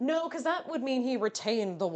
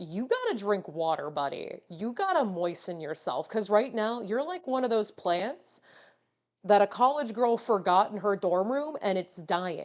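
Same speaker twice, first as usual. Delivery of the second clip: ordinary talk, nothing marked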